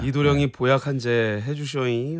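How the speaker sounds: ordinary talk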